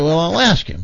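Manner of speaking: ordinary delivery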